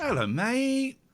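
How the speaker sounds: exaggerated high, slow sing-song hello.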